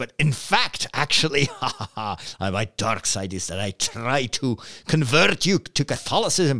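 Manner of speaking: slow, sudden put-on Scottish accent. Joking about being a Star Wars priest, in a sudden Scottish accent. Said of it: "I use a Scottish accent all of a sudden".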